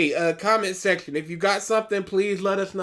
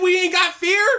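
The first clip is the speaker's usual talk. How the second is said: mock screaming shout; 12 semitones higher, 5 dB louder than usual. Describing a scene, the speaker retells a character screaming a line. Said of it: "a character screaming".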